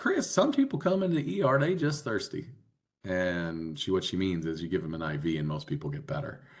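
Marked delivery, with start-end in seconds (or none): 0.0-2.5 put-on very high, rural country West Virginia accent. Quoting a woman from West Virginia, in her country West Virginia accent. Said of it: "when I do this accent".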